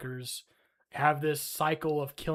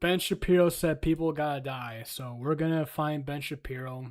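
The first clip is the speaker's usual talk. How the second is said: ordinary delivery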